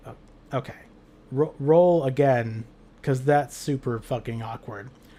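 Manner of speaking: ordinary talk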